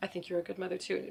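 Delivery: earnest, sincere manner of speaking. Retelling how an eight-year-old daughter answered: imitating someone speaking earnestly. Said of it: "she said it, like, really earnestly".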